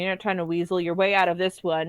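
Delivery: normal talking voice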